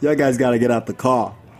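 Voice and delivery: ordinary talk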